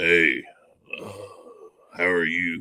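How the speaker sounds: deep, slow smoker's voice of a woman. Joking about dressing as Big Deborah, doing a deep smoker's woman voice. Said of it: "that woman with that deep voice that's been smoking Pall Malls".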